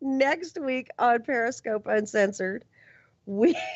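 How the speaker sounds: giggling while speaking. Announcing next week's guest, laughing while talking. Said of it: "I can't stop laughing".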